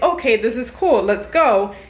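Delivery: ordinary delivery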